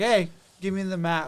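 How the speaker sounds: plain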